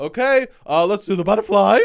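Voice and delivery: high, loud voice cracking. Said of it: "not only is your voice cracking".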